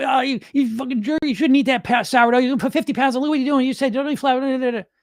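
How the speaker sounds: very high-pitched, harsh, berating scolding. Describing the voice he talks to himself in, doing a put-on authoritarian parental voice. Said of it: "parental, disciplinarian, authoritarian voice".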